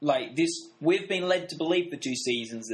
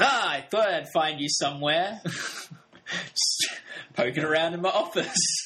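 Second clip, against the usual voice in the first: slow, cheery, easygoing, sunny put-on drawl. Act out the Vice President walking in and speaking, imitating a sunny disposition. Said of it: "now that I hear you imitating his sunny disposition".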